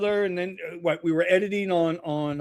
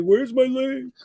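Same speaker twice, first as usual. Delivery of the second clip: put-on high-pitched yelling; 7 semitones higher than usual. Retelling how a guest yells for the show link: imitating Steve yelling. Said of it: "he'll start yelling at me".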